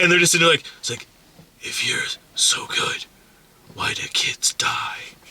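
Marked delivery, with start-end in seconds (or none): 1.6-5.0 slow, deliberate, whispered vigilante voice.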